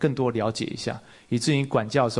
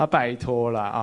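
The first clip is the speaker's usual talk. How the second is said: ordinary delivery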